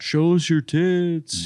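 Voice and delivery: play-acted, very high, jeering heckling yell. Retelling what a man in the audience yelled as the show started, retelling a yell. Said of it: "the dragon shirt guy yells out".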